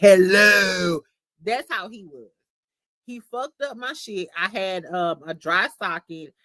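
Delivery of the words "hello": eerie horror-film man's voice, loud and drawn out. Speaker mimics how men in horror movies say hello: horror-movie man voice. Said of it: "like from them horror movies be like".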